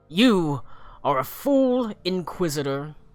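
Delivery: scornful, contemptuous, angry sneering fury. Narrating a game scene, voicing a character addressing the inquisitor: angry sneer. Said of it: "sneers angrily".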